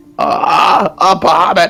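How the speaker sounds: panicked, losing it. Narrating a scene, the small green dragon sees Bahamut appear; freaking out. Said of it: "the small green dragon just loses his shit".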